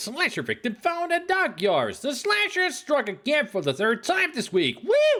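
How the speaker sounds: overexcited, way too thrilled newsreader voice, pitched very high. Redoing a news report someone read bored; too excited news reading. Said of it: "maybe too excited".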